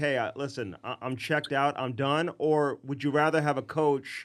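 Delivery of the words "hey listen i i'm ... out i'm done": ordinary talk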